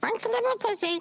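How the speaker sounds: very high voice like a talking parrot. Showing off a pirate costume's talking parrot: talking parrot voice. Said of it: "Just so I could do this".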